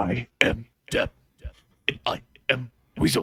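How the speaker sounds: put-on death-metal growl. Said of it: "Sound like Death Clock".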